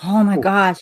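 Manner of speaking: crowd oohing and gasping in awe. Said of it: "kinda oohing, aahing at this".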